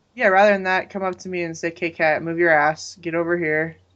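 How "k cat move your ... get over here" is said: ordinary talk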